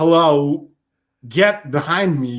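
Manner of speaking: bad, odd, slow drawn-out voice. Moving on to another impression: Christopher Walken impression. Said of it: "My Christopher Walken's even worse".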